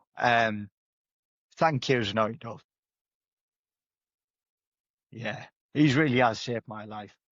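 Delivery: emotional, welling up, choked, holding back tears. Asked for a message to the man who shaped their life: emotional, welling up. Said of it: "you can tell I'm quite emotional now".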